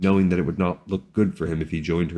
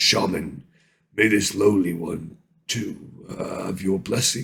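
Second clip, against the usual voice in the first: slow, gruff, polite delivery. From the cage, Brox speaks up to the shaman; Brox's gruff voice. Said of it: "came Brox's gruff voice".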